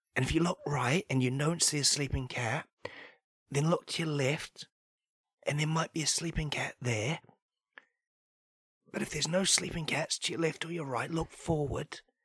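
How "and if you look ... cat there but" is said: hushed whisper. Speaker tells listeners where to find a sleeping cat, whispering. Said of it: "I'm going to have to whisper this bit".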